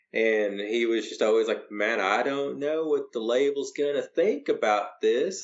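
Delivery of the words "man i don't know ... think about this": put-on heavy Arkansas accent, laid on thick, pitched up. Retelling what the recording engineer kept saying: imitating Barry Pointer's thick Arkansas accent. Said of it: "he had a really thick Arkansas accent".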